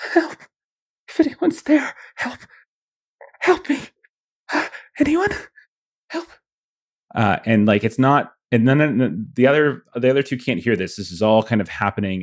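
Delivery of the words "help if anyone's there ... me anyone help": very high, whimpering, pleading cry. Voicing a hidden voice heard on the upper floors, a whimpering cry for help. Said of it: "this kind of whimpering consciousness underneath it all".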